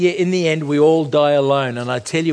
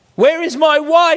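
very high, shrieking scream; 12 semitones higher, 4 dB louder than usual. A man alone in total darkness asks for his wife, screaming. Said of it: "he screamed".

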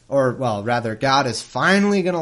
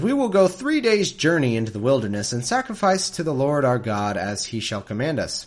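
ordinary delivery

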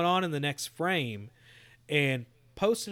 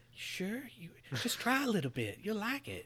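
soft, creepy put-on voice; 4 semitones higher, 9 dB quieter than usual. Speaker voices Square Enix stepping in on the Avengers game, creepy voice as Square Enix. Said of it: "that was creepy voice".

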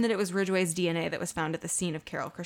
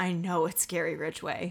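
put-on breathless speech, quieter, slower; 4 dB quieter than usual. Retelling how a man spoke before touching the paper, retelling a breathless remark. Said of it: "breathlessly said".

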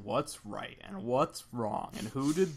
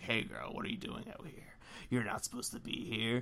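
put-on menacing, threatening, breathy older man's whisper; 7 dB quieter than usual. Acting out a predicted scene where a shady man corners a girl: menacing shady older man. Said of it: "really menace her".

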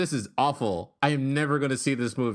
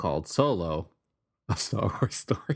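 words broken up by laughing throughout; 3 semitones lower than usual. Revealing the film's title to another speaker, laughing while talking. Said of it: "I can't say it straight".

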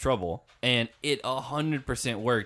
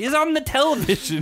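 put-on very high, shrill, loud old lady voice; 7 dB louder than usual. Mocking another speaker's phrasing: mocking old lady voice. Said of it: "You sound like an old lady".

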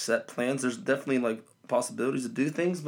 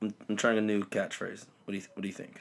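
ordinary delivery

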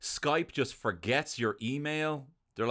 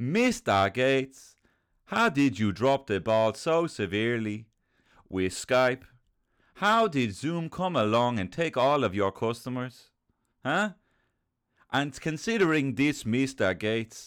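slow, put-on Dublin twang; 4 dB louder than usual. Addressing a CEO directly, in a Dublin twang. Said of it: "I'm doing a Dublin twang".

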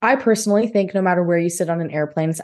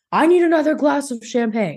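high-pitched, demanding, insistent, entitled tone; 6 semitones higher than usual. Retelling what an unruly passenger said, mock-demanding. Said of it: "or demanding".

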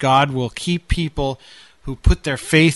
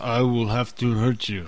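soft, machine-like, robotic computer voice; 3 semitones lower, 5 dB quieter than usual. Repeating what a voice in the house said, mimic it as a robotic computer voice. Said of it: "It's almost a computer voice".

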